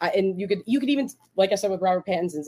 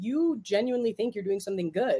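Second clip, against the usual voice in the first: ordinary talk, nothing marked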